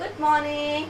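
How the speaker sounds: plain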